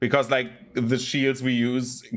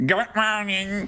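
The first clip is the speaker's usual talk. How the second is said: very high, pinched-nose nasal mocking voice; 9 semitones higher than usual. Retelling a customer mocking the speaker's greeting: imitating a nasal mocking voice. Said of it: "Held his nose like".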